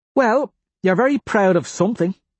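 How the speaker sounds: openly suspicious tone. Reading a woman's remark to the narrator in a story, suspicious. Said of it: "she says suspiciously".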